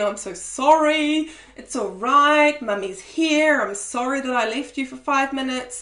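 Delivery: pleading, apologetic begging with the word sorry drawn out. Showing what not to say when cuddling a crying child: begging, apologetic parent. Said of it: "begging them to stop crying and saying".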